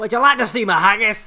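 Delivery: loud, laid-on fake Scottish accent. Joking about a voice message from Drew McIntyre: fake Scottish accent as Drew McIntyre. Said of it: "Scottish accent is har-, harder to fake".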